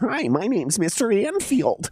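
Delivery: very high, dorky, polite nerdy guy voice.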